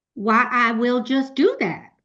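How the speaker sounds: slow put-on American accent, best attempt. Answering a request to speak in an American accent: put-on American accent. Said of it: "That's about as much American accent as I can get".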